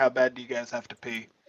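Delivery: totally deadpan, flat and expressionless. A player's character in a tabletop game asks two party members, totally deadpan. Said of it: "just totally deadpan be like".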